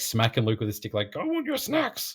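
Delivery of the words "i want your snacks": very high, squeaky, cranky puppet-creature squeal. Retelling a film scene where the hermit smacks Luke with a stick: imitating Yoda. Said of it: "and he's like".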